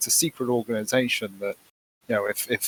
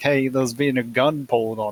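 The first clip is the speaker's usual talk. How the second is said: normal talking voice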